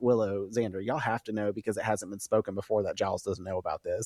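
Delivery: ordinary talk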